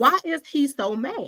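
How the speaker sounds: mock high, drawn-out cackling, laughing through words. Speaker retells their reaction to a man who was angry at them; retelling cackling laughter. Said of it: "I was sitting there like cackling".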